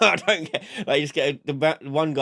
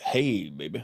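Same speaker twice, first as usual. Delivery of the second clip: put-on sexy radio voice, lower; 6 semitones lower, 4 dB quieter than usual. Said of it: "I have to go".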